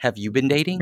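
ordinary delivery

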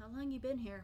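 hissed delivery. Voicing a woman who helps you up and dusts you off, hissing. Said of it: "She kind of hisses".

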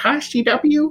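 nerdy, geeky, very high-pitched voice. Recalling how the youngest sister teased them by greeting them in a geeky voice. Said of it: "talked to me like in kind of a geeky voice".

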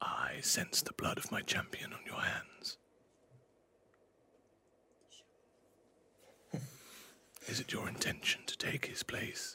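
soft, breathy, hushed whisper. A narrator voices a figure approaching the listener in the dark: whispering in the dark. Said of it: "he whispers to you in the dark".

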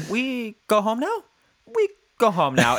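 put-on high little-kid voice with rising lilt on "now". Imitating a young nephew asking for something: statement with question inflection. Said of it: "always kind of a statement with a question inflection".

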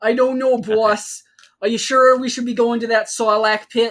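put-on Brooklyn-accented gangster henchman voice. Riffing with others on giving Boba Fett a Brooklyn accent, Brooklyn-accent Boba Fett voice. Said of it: "give Boba Fett the Brooklyn accent".

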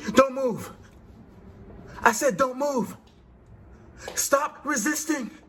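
very high-pitched police-officer voice. Speaker tells the audience how his excited wife sounds, imitating her sounding like police. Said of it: "she sounds like the police".

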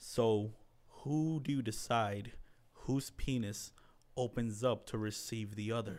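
slow, dead-serious, straight delivery. Retelling a TV scene, asking a coworker a question: Dwight voice, dead serious. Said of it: "the most serious face, he's like".

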